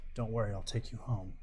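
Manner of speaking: low-toned, hushed half-whisper. Speaking to a downed companion while driving her back, in a low-toned half-whisper. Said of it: "in a really low toned voice whisper".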